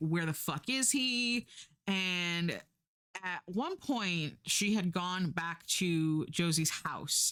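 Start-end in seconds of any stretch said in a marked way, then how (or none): 0.0-1.5 acted-out alarmed, distraught, scared delivery, high. Retelling a friend's reaction when her partner does not come home: imitating someone scared and upset. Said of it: "she is scared and upset".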